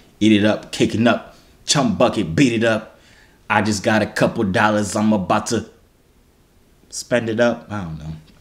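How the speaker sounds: plain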